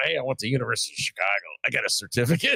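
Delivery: sarcastic, tongue-in-cheek, inflated boasting. Retelling what the speaker tells everyone: retelling own sarcastic words. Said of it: "I'm being sarcastic".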